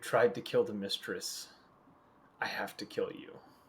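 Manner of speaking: wild, almost feral, menacing voice. Narrator voicing what a woman says to the party, in an almost feral voice. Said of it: "She says in this almost feral voice".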